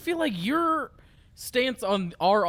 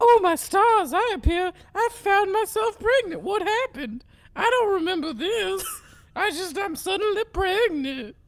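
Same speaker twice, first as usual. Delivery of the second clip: very high woman character voice; 12 semitones higher, 3 dB louder than usual. A player voices a character who is suddenly pregnant, in a put-on lady voice. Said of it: "I don't know if I can do a lady voice anymore".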